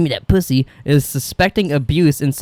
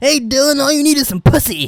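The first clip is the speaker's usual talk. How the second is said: very high, badly done put-on voice; 11 semitones higher than usual. Retelling a movie plot to friends, doing a Hugh Hefner voice. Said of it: "Is that your Hugh Hefner imitation?".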